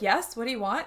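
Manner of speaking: ordinary talk, nothing marked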